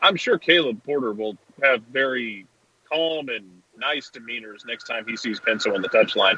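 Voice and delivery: mock-sincere, sarcastic tone. Commenting on a coach meeting a referee again: sarcastic tone. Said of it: "Was that sarcasm font".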